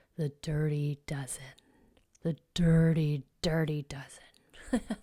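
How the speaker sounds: low, very slow, menacing, drawn-out ominous intoning. Introducing the dirty dozen, saying the name in an ominous, scary tone. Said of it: "How about if I say it like this? ... Make it sound ominous and scary".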